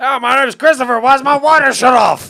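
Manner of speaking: shrill, loud, high-pitched voice. Retelling a phone call while imitating Christopher. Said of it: "you do very nice impersonations of Christopher".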